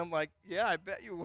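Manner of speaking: ordinary talk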